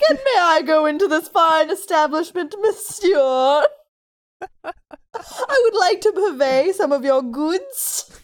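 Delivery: put-on loud, old-fashioned, high-class posh British accent. Speaking as a baby trying to get into bars, in an old high-class british accent. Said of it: "talking like old, high-class British people".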